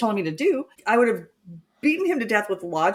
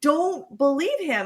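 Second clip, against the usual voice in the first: mock yelling, high and urgent; 6 semitones higher than usual. Retelling how they yelled at a woman on tv: retelling yelling at the tv. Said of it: "yelling at her, the T V".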